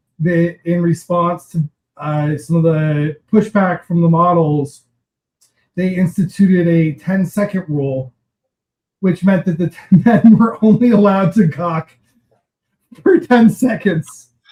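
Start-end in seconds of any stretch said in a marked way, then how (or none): 9.0-14.3 talking through laughter. Explaining a rule for how long crew could stare: laughing while talking. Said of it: "I don't know why I'm laughing".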